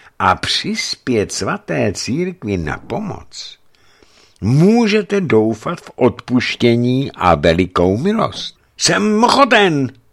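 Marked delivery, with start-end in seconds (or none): 8.8-9.9 very high, eager, glad, joyful outburst. The revived merchant answers Schönwald, exclaiming joyfully. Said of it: "radostně zvolal oživší kupec".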